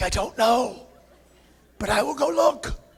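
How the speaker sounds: put-on whispered delivery. Retelling a late-night exchange after a noise: imitating a whisper. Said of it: "Why are we whispering?".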